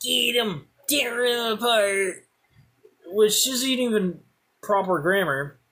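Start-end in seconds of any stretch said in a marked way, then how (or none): 0.0-2.3 high, egging-on, sic-'em style urging tone. Retelling how dogs dragged him toward his teacher, imitating Miss Lewis. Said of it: "It's my English teacher, Miss Lewis. She sees me. I also happen to know that she is a dog enthusiast. She has like five Doberman Pinschers".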